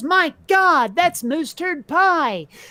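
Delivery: acted burly man's shout, loud and high. Retelling a story where a burly dude bites the pie: imitating a yell. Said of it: "and he yells".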